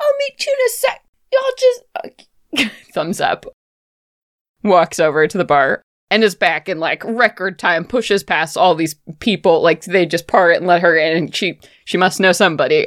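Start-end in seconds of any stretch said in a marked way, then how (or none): 0.0-1.8 much higher, bubbly voice. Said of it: "She's like".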